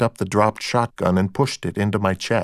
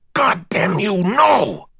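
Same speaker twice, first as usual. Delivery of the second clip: fierce, violent hissed outburst, very high pitch; 10 semitones higher than usual. Deborah answers Alanna, who has picked up a sharp knife, in a violent hissing voice. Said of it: "Deborah said in a violent hissing voice".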